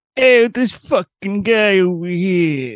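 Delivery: fake New York accent, slow, high and drawn out. Retelling a fake voice leak heard online: imitating a new york accent. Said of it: "He was just doing, like, a New York accent".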